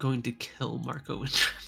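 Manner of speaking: muttering quietly under breath. Voicing a librarian writing a note, muttering quietly under breath.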